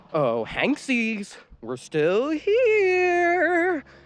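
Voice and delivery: sweet, very high cooing with "here" stretched out. Narrating a chase story, voicing Tex calling to the fleeing group, Tex cooing. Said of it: "You, Red Robot, have done such awful things to those people, murdering them all because they were afraid of a certain logo? / As [name]'s face got closest".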